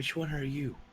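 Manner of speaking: very quiet, hushed half-whisper. Player as Laz, walking up to a statue and asking Helga, half-whispering. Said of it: "and then whispering".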